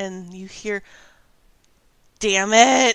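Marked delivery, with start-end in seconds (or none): 2.2-3.0 loud, groaning, pained voice. Voicing a wounded character groaning on the ground: groaning in pain. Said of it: "she is groaning on the ground".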